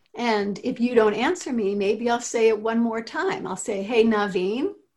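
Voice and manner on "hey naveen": nice, friendly, pleasant tone. Showing how to say someone's name to get their attention, nice pleasant tone. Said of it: "say their name with a nice and pleasant tone".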